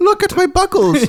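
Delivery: leprechaun impression voice. Retelling the Leprechaun's first appearance to Ozzy: Leprechaun impression. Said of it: "And he's like".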